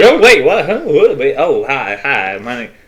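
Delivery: startled, just-woken, muddled and lost-sounding voice. Introducing the advanced teachers, voicing Uncle as he wakes up: just waking up. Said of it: "Uncle kind of just like wakes up".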